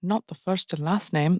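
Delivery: bad Scottish accent, spoken very quietly and softly. Reenacting bad dialogue the speaker wrote down, Hayes Campbell in a bad Scottish accent.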